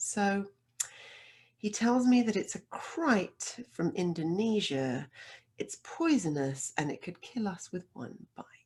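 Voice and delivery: very calm, steady, even, unruffled delivery. Retelling how a friend calmly reported the snake was deadly: imitating a very calm voice. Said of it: "in that same very calm voice".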